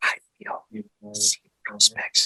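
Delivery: hushed, barely voiced whisper. Speaker tells Annette they're going to whisper, then says it whispering. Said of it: "I'm gonna whisper".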